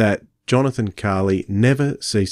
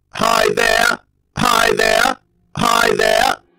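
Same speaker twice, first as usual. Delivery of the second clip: put-on robotic alien voice, higher and louder; 4 dB louder than usual. Playing a villain plotting galactic conquest in a skit: Dalek voice. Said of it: "Comrade Dalek".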